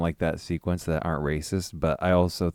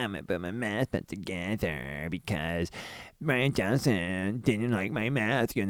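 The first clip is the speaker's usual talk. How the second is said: mock sulky, whiny bratty-kid voice; 2 semitones higher, 5 dB quieter than usual. Mocking a film character who acts like a petty child: mocking petty child voice. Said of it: "seemed like a petty child being".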